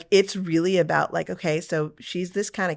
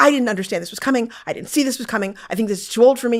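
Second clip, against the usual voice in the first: play-acted, pitched-up, angry, fed-up, furious rant; 6 semitones higher, 4 dB louder than usual. Retelling how a thirteen-year-old daughter reacted to a show: imitating someone furious. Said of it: "and she was, like, furious".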